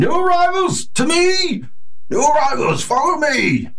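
piercing, very high, ragged calling voice. Narrating to the group, voicing a man calling out to new arrivals, ragged voice. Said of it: "he sort of has this ragged voice".

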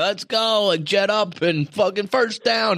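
very high, hyped stadium PA announcer voice. Describing the guy on the stadium mic pumping up the crowd: stadium PA announcer voice. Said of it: "he's got that PA voice".

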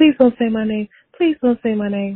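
loud, put-on pleading voice. Retelling own past reaction to a name being read, in Darla mode. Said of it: "I got into my Darla mode".

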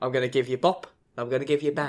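fake, put-on New Zealand accent. Acting out what a guy says to a friend, in a put-on New Zealand accent. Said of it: "What's this accent you're giving him?".

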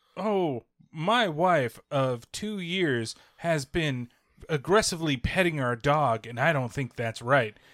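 slow, robotic text-to-speech computer voice. Describing Reddit story videos on TikTok, imitating a computer voice. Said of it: "the computer voice coming in".

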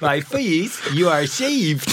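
clumsy Southern accent. Speaker tries an accent for a sermon line despite his sons' warning: bad Southern accent. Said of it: "I always end up somehow Southern".

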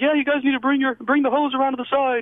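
very high-pitched yelled delivery. Retelling what a scout yelled over the radio: imitating a scout yelling. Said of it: "he starts yelling".

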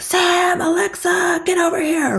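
play-acted very high, slow, drawn-out angry shouting. Explaining dog training, acting out calling the dogs over in a mock-angry yell. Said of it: "In that angry voice".

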